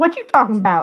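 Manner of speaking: sassy cat voice with loads of attitude. Speaker voices what a former cat, Sierra, would say; imitating Sierra's sassy voice. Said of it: "she had like the sassiest voice".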